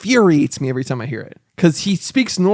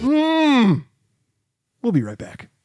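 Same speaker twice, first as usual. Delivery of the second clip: pitched-up, swooping news-podcast host voice, long "mm"; 8 semitones higher than usual. Showing how the host reacts anytime somebody tells him a fact, do a The Daily host impression. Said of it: "Anytime somebody tells him a fact like".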